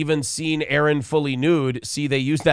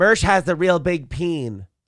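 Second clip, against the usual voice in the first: slow, put-on, generic girly voice. Saying a crude joke line in a generic girl voice. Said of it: "That's just a generic girl voice".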